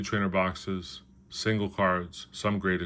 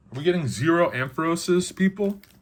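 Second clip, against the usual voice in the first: raised, calling voice, swooping high; 10 semitones higher, 5 dB louder than usual. Opening booster packs and counting mimikyus, calling out to viewers, raised voice. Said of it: "I didn't mean to raise my voice there".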